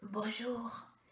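soft, raspy, hoarse, rough-edged voice. Narrator reading a hooded stranger greeting at the door, hoarse voice. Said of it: "dit-il d'une voix enrouée".

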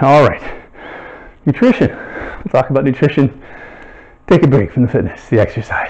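catching breath. Still recovering from push-ups while moving on to nutrition, out of breath. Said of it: "Catch my breath here".

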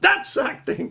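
high, loud, slow, stern pronouncement.

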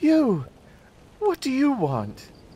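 startled, frightened gasping cry, very high pitch. Narrating a story, Deidre turns to the man who called her: gasping with fright. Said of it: "She turned and gasped, eyes round with fright".

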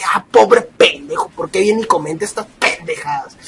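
very low, hushed, scornful and contemptuous scoff. Speaker shows viewers how to treat insulting commenters, contemptuous. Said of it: "véanlo con desprecio, como diciendo".

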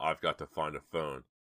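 ordinary talk

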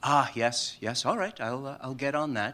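put-on calm tone. Retelling how George answered when urged to get rid of something: imitating George, very calm. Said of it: "very calm".

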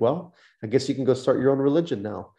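normal talking voice

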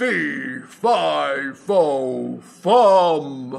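booming, big, round, very slow giant voice. Showing how the man giant should sound, a very round, loud giant voice. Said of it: "a very round, loud sound for the giant".

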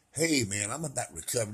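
mild, soft-spoken, gentle and quiet delivery. Showing how a man who is not loud and boisterous talks: not loud, soft-spoken. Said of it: "If you're not loud and boisterous and you, you talk like this".

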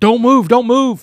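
very loud, shrill, high barked screaming. Retelling an arrest, imitating a cop screaming at the top of his lungs. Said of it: "he's screaming at the top of his lungs".

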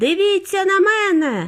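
very high yelling shout. A boy racing toward a huge TV camera, shouting while running. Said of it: "кричав він на бігу".

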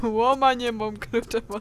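loud, slow, laughing mocking tone.

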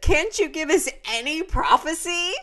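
put-on German accent, high, loud, desperate. Retelling a question from the crowd at a conference: imitating a desperate German voice. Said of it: "desperate German voice said".

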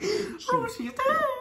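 laughing squeal, very high, loud giggling.

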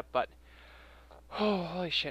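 winded, catching breath. Introducing footage with messed-up audio to viewers, out of breath. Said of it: "I'm out of breath".

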